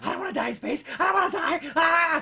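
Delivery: very high-pitched, frantic, panicked voice. Retelling a scene where a ship's captain panics: imitating someone freaking out. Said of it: "the captain of this other ship is literally freaking out".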